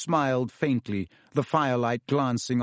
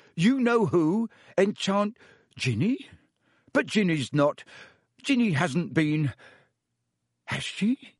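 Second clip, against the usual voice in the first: dumbfounded, halting, pitched-up, stunned disbelief; 6 semitones higher than usual. A character hearing that a girl was enchanted, stunned. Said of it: "Weasley in a stunned voice".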